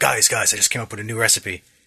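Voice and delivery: sudden, put-on character voice in announcing style. Retelling what the party's cook says in the game: Ignis voice.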